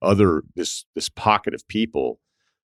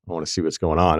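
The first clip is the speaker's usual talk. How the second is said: usual speaking voice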